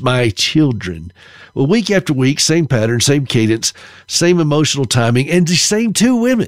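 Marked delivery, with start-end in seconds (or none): 0.0-1.1 put-on very affected voice. Imitating the woman who gave the interpretation, in a very affected voice. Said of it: "she had this very affected voice".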